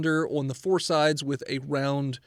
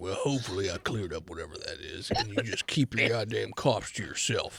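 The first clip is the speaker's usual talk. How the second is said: very deep, very low huge-creature giant voice; 8 semitones lower, 5 dB quieter than usual. Voicing a Goliath who offers to help a coughing character: voicing a Goliath. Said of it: "Yes, a Goliath".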